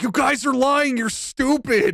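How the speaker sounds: very high, fed-up, pissed-off outburst. Retelling an innocent suspect's reply to cops: imitating an angry suspect. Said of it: "He's just pissed".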